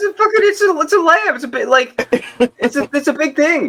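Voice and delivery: voice jumps very high into a comic voice. Talking about someone buying half a whole lamb: Jerry Seinfeld voice. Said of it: "why did my voice just turn to Jerry Seinfeld".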